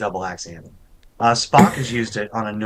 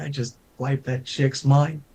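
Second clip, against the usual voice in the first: put-on gloating robot voice, higher pitch; 4 semitones higher than usual. Imitating Nomad floating away, pleased with what he did: gloating Nomad voice. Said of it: "almost liked what he was doing".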